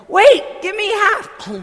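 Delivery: very high, very loud, shrill yell. Retelling what someone yelled when offered a dumpling, retelling a yell. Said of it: "Lynn yells".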